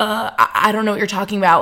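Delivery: flustered, rattled voice. Retelling how the man filming them answered: imitating a rattled man.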